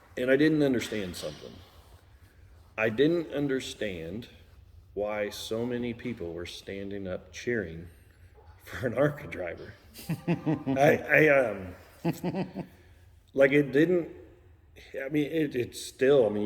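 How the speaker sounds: choked-up, halting, faltering voice catching. Describing the crowd cheering after winning: choked up. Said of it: "you can tell I'm kinda getting a little choked up here".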